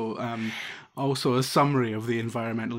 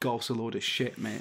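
mock under-breath grumble, quieter; 4 dB quieter than usual. Describing a man watching golf intently, quoting his constant comment: retelling an under-breath mutter. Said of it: "constantly under his breath going".

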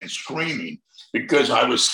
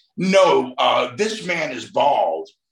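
ordinary talk, nothing marked

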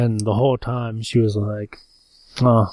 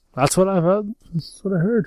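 put-on high-pitched old man character voice; 9 semitones higher than usual. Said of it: "what voice is that even? It's like Jerry Seinfeld".

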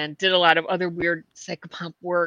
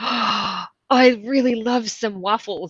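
slow, unhurried, mild put-on voice calling out; 4 semitones higher than usual. Retelling a voice overheard in a grocery store aisle: imitating a loud voice. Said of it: "It was really loud".

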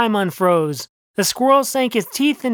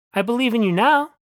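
ordinary delivery

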